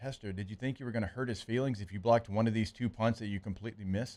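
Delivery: soft, dead-calm, the calmest voice imaginable. Retelling what Saban said to him after a missed punt block: imitating Saban's calm voice. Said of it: "like in just like the most calm voice ever".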